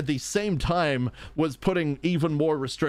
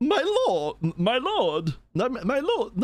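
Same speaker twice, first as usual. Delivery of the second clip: put-on old lady voice, higher and slower; 10 semitones higher than usual. Trying out a character voice for a game, exclaiming over and over. Old librarian lady voice. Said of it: "my voice for the Wicker Bottom".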